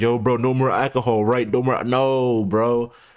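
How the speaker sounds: acted easygoing, casual bro-style dude voice. Mimicking someone casually telling a friend to quit: imitating casual bro advice. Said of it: "He's like".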